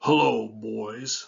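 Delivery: put-on deep grown-man voice, slow, "boys" drawn out. Retelling how a grown man stopped the boys: imitating Roland's deep voice. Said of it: "and in a deep voice said".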